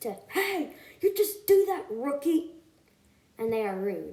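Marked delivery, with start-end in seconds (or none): 0.3-2.5 high, mean-spirited yell in beaver voice. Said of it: "They just yell at Boog and Elliot".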